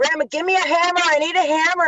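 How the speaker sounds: mock screaming, high-pitched and pleading. Retelling a police visit to grandma's house: retelling a scream. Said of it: "I'm screaming".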